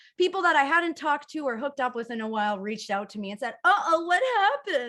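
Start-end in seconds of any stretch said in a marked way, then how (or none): 3.7-4.9 put-on grown-up speaking in high, babyish voice. Quoting exes who messaged after a fall: imitating exes' babyish voice. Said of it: "all of my exes sound like that".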